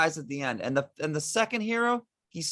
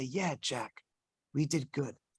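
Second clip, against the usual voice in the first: mock tearful voice, lower and slower; 6 semitones lower, 5 dB quieter than usual. Acting out a player answering a dying friend in a dramatic scene, imitating speaking through tears. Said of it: "and he whispers".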